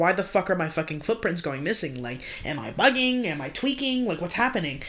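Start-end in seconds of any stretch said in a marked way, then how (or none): none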